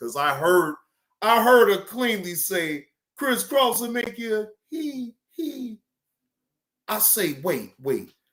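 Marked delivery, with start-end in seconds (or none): 3.2-5.8 mocking put-on woman's voice, much quieter. Speaker mimics what he heard a woman say: mocking Moonlight. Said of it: "I'm mocking Moonlight right now".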